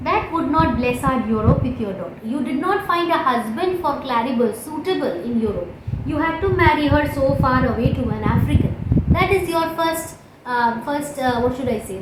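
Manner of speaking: usual speaking voice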